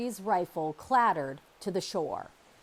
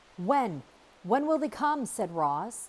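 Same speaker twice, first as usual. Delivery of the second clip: usual speaking voice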